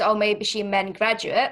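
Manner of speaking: ordinary delivery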